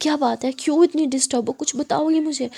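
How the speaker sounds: ordinary delivery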